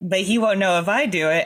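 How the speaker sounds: ordinary delivery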